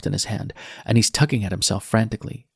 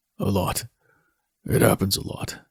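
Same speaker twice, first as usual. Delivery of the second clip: quiet, hushed, soft-spoken tone. Narrator reads a man's reply to her: hushed tone. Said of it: "he says in a hushed tone".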